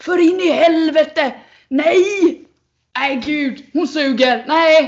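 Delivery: put-on loud, very slow yelling, long "nej". Describing a man watching athletics on TV with the speaker, imitating him yelling at the TV. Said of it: "sitter framför tvn och bara skriker".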